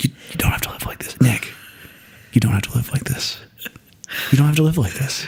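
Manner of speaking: put-on ASMR-style whispering voice. Speaker repeats the line from a Rob Bell video: Rob Bell ASMR whisper voice. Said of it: "He did it in his ASMR voice".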